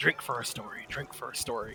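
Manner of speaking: mumbling under breath. Voicing a man answering the group's questions in a game, muttering. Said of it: "He kind of mutters back again".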